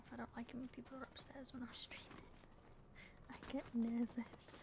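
hushed whisper. Streamer speaking to viewers while people are upstairs, whispering. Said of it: "I'm whispering now".

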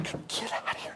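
whispered, hushed voice. Retelling telling Pippin to get out, hiding in a closet: imitating a hushed command. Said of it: "I'm trying not to be loud".

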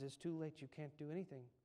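play-acted, soft, mournful, sorrowful, melancholy delivery. Retelling a story, the preacher answers the man again, in a mock-melancholy tone. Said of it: "in melancholy tone".

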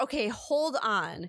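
put-on voice of a four-year-old child. Retelling what a four-year-old niece said on hearing a podcast: imitating Maria, four-year-old niece. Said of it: "She talks like that".

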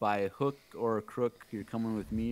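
normal talking voice

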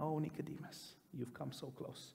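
acted near-whisper. A speaker repeats a quoted line he calls the punchline, retelling a whisper to himself. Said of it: "almost in a whisper to himself".

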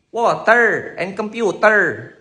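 put-on slow Filipino accent. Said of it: "They say".

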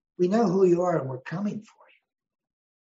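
grade-B action-movie tough-guy voice. Quoting a president's line about the attackers: Liam Neeson in Taken voice. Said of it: "like Liam Neeson in this movie Taken".

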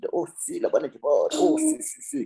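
put-on very high, thin little old man voice. Recounting what he once told people, in his old man voice. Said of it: "con mi voz de viejito".

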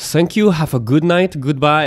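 so-so attempt at German accent. Retelling how the woman who served the food spoke, in a not-good German accent. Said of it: "I don't have a good German accent".

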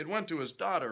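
ordinary delivery

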